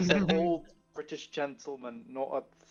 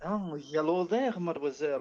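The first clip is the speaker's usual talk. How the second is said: fake put-on French accent. Answering a request to do a french accent, in a french accent. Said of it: "Can you do a French accent?".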